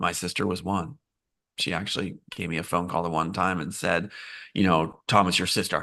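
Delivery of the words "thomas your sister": put-on very stern voice. Retelling a phone call from a sister: imitating her very stern voice. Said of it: "in a very stern voice".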